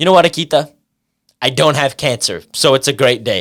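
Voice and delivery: dry, utterly deadpan delivery. Retelling what Kevin said with the straightest face before an exam: imitating Kevin, straight-faced deadpan. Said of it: "with the straightest face and said".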